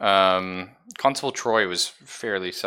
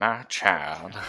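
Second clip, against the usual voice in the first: drawn-out Southern drawl, Southern style; 5 dB quieter than usual. Trying to recall the accent for Father Roger: Father Roger Southern drawl. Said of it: "Southern drawl".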